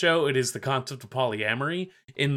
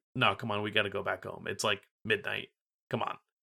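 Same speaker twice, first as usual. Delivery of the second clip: low, flat, dry, expressionless deadpan mutter; 4 semitones lower, 7 dB quieter than usual. Discussing how the character Rika acts in reality: mock-deadpan Rika impression. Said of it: "she's just like deadpan".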